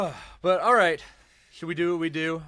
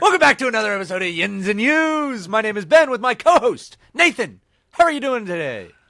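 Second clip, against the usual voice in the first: slight pirate accent, slightly higher pitch; 5 semitones higher than usual. Podcast host opens the episode and greets his co-host, a little piratey voice. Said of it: "You sound like a pirate there".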